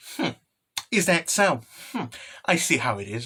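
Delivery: soft, put-on knowing, self-satisfied tone. Retelling Skessa-chan's reply in the story, mock-smug Skessa-chan voice. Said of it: "Skessa-chan very smugly".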